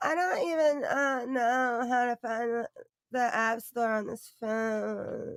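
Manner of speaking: derisive, high, drawn-out, belittling mocking parody. Mocking how another woman talks about her phone: mocking imitation of her. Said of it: "she said".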